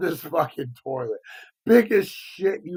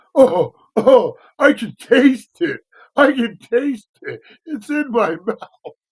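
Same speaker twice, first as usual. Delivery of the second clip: put-on child freaking out, high, loud cry; 7 semitones higher, 8 dB louder than usual. Retelling how a kid reacted in the car: imitating a kid freaking out. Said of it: "he's freaking the fuck out".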